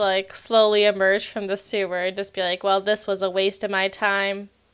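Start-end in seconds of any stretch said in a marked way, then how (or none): 2.6-4.5 put-on deadpan tone, quieter. Speaker acting out what they say after emerging from the sewer, mock-deadpan. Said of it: "the most deadpan sigh".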